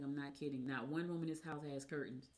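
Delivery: ordinary delivery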